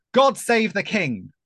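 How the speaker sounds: very loud, slow, booming shout. Retelling shouting out while police led away booed protesters: retelling own loud shout. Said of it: "So I shouted out in a loud voice".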